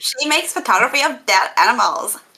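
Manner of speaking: put-on spot-on, convincing Valley Girl accent. Echoing what another speaker just said, in a Valley Girl accent. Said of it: "That is way too good of a Valley Girl accent".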